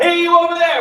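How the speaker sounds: very loud, full, big, thick voice. Showing different ways to use the voice, the speaker calls out: big, thick voice. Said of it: "more of a big, thick sound".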